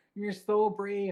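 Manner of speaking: mock drunk girl voice. Telling how a drunk girl came up and spoke to the speaker, in a put-on drunk voice. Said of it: "That's my drunk voice".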